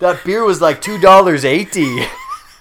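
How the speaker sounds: loud, laughing, put-on Jamaican accent attempting American.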